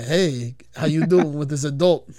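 put-on Newark-style North Jersey accent. Asked to do the accent, retelling how a guy acted last night: Gambit's Newark accent. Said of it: "Do the accent".

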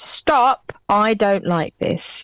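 mock assertive, firm and direct. Speaker retells turning round to tell someone poking them to stop, slightly louder tone. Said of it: "in a slightly louder tone".

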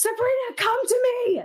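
very high, straining, drawn-out calling scream. Being dragged away in the game, screaming to compel a best friend. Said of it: "So I'm going to try to scream".

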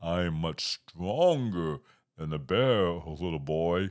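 big, deep, loud booming storybook voice. Reading a story aloud, the giant answers the boy: deep voice. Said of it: "The deep voice".

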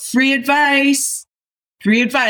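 very high, calling-out street yell. Recounting standing in front of a newsstand, retelling a yell. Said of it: "I yelled".

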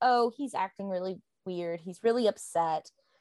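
ordinary delivery

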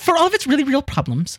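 very high, pitched-way-up put-on voice. Quoting a line about the United States, Matthew Yglesias impression. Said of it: "let me do my Maddie Y voice right".

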